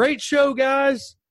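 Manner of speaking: sudden, very high-pitched, loud shout. Retelling a guy fifty yards away calling out after the show: imitating someone shouting. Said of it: "all of a sudden shouts out".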